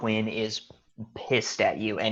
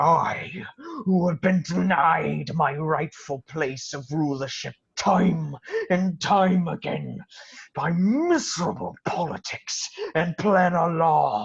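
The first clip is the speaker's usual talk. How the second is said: enraged villain voice, higher; 7 semitones higher, 3 dB louder than usual. Voicing an enlarged prince who threatens a player: angry prince character voice. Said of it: "suitably enlarged and angry, looks at you, Shuprit, and says".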